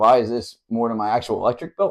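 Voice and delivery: plain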